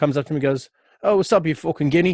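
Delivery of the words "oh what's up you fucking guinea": put-on English accent, high and raised. Retelling a stranger's greeting to the speaker, in a put-on English accent. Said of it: "fucking English accent".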